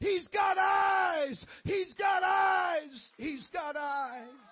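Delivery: acted, slow, high, loud, drawn-out screaming cry. Retelling a nurse running out of a room: imitating a screaming nurse.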